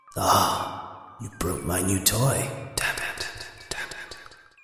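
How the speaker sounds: hushed whispering voice. Voicing a voice that only one listener can hear, in a whisper. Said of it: "And the whisper fades".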